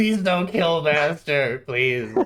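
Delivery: cowering, whimpering, pleading goblin voice. Narrating a scene, voice a hobgoblin lifted by its head, whimpering hobgoblin plea. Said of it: "the hobgoblin just kind of whimpering".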